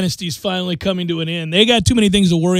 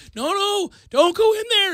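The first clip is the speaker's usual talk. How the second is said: mock very high, urgent yell; 13 semitones higher, 4 dB quieter than usual. Acting out a viewer watching a scary movie: imitating yelling at the TV. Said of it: "You're yelling at your television".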